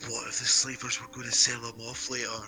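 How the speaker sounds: whispering. Playing a character, secretly whispering a question to another character: whispering in someone's ear. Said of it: "whisper in Schwa-, Schwarzenegger's ear".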